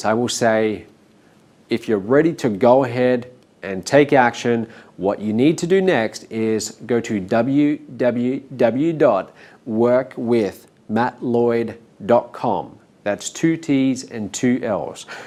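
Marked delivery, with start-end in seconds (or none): 1.7-15.1 slow, deliberate, spelled out letter by letter. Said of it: "So I will spell it out slowly like that".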